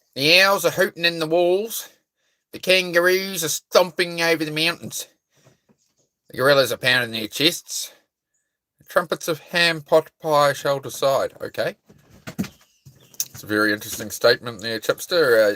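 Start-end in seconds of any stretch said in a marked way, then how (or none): 0.2-10.9 high put-on Australian accent held throughout. For a listener, the speaker reads odd statements in an australian accent. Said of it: "I tried to Australian accent it the whole way through".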